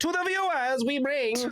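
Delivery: very high, grand, herald-style proclaiming voice. Joking about opening a scroll to address the viewers: proclaiming from a scroll. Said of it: "opening a scroll and be like".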